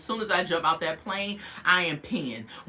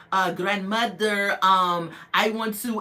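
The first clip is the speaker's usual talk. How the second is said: slow English in a fake Spanish accent. Imitating someone speaking English to a grandmother: imitating English with fake Spanish accent. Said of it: "trying to spin a, a Spanish accent on it".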